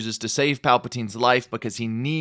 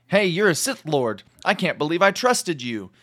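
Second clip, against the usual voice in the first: mock angry, accusing outburst, pitched up; 5 semitones higher than usual. Retelling a movie scene where Anakin confronts Palpatine, imitating Anakin angrily. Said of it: "he gets all mad at him".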